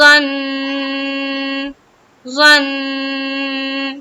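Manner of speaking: nasalized doubled n. Showing learners how to stop on a doubled nun: stopping with held nasal ghunna. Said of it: "نون مشدد کا غنہ کرنا ہے".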